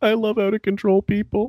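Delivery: giddy, thrilled delight, pitched very high. Retelling a clip where Howard said this: imitating Howard's giddy voice. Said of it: "he had that giddy voice and goes".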